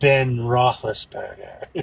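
slow, drawn-out mock English accent.

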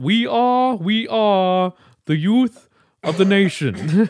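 loud, very high, slow, drawn-out belted delivery. Picturing a politician doing rock lyrics: Bernie Sanders voice. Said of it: "I love slipping into Bernie".

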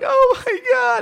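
very high, loud, shrill screaming shriek. Retelling a crying girl who came into a Subway, imitating her screaming. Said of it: "Screaming like".

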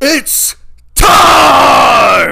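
booming, shrill announcer shout, full arena yell. Asked for their best Bruce Buffer, giving a Bruce Buffer announcer shout. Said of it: "Can you do your best Bruce Buffer".

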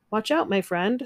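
ordinary delivery

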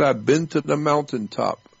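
usual speaking voice

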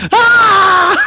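dramatic, high, loud mock death scream.

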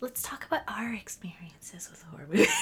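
soft, breathy, hushed woman's voice.

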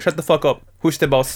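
put-on tough Colombian cartel-boss voice. Acting out a drug dealer proposing a gold statue: put-on Colombian drug dealer voice. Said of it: "my voice of, uh, the spirit of Colombia".

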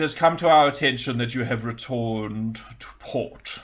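haughty, sneering, very snotty, snobby tone. Game master voicing the court wizard speaking in the players' minds, very snotty, snobby. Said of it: "in a very snotty, snobby way".

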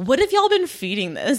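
snarky, sneering, scornful, disbelieving tone. Retelling a show scene, quoting the animal sanctuary guy: imitating a snarky man. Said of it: "where this guy is so snarky".

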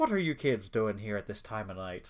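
put-on Irish accent, old night watchman voice. Retelling a story, speaker imagines the old security guard finding the kids: Irish accent. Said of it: "picture, like, an old security guard guy being like".

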